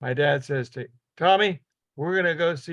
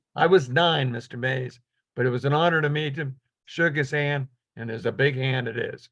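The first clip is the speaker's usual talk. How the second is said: ordinary talk, nothing marked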